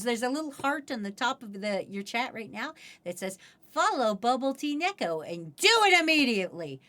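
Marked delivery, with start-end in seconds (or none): none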